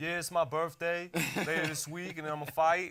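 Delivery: put-on high, thick Brooklyn accent, kid voice. Retelling a boxer's interview at age seven: imitating Bruce's thick Brooklyn accent. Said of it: "with the thick Brooklyn accent where he's like".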